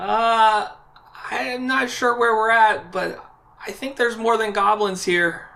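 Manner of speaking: crying out the words, high. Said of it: "Velma cries out after she hears you say that".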